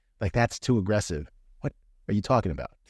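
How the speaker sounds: ordinary talk, nothing marked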